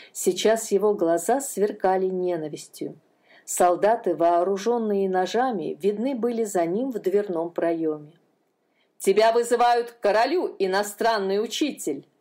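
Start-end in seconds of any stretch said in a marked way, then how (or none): 9.0-12.0 barking, commanding, barked delivery. An official arriving with soldiers barks at the foreign teacher. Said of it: "рявкнул он".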